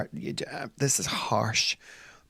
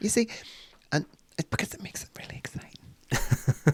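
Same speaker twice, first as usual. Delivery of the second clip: breathy, hushed, conspiratorial whispered aside; 7 semitones higher than usual. Explaining a discreet play idea to another speaker: whispering. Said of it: "Why are you whispering?".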